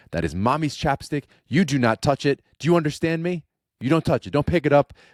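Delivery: very high, loud, stern little scolding. A dad acts out his young daughter scolding him: imitating Cora scolding. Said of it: "She's scolding me".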